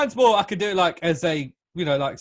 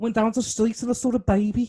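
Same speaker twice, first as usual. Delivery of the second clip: put-on Brummie Birmingham accent; 6 semitones higher than usual. Taking turns doing regional accents, now trying a Birmingham one: Brummie accent. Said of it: "That was well Brummy".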